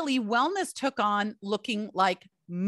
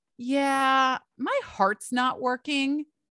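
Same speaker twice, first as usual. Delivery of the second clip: put-on very calm, melancholy tone, drawn-out "yeah"; 4 semitones higher than usual. Retelling a partner's news at home: imitating a calm, melancholy voice. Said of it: "very calmly, very melancholy".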